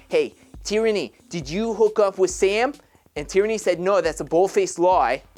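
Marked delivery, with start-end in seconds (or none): 0.1-2.7 rough, put-on Brooklyn accent. Retelling what she said to Tierney in the living room: attempted Brooklyn accent. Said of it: "I'm trying to do the Brooklyn accent".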